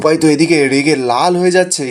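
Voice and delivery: ordinary talk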